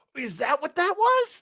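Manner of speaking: surprise, voice shooting very high. Reacting to the other speaker's remark, surprised with the voice going high. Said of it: "You hear how high my voice goes?".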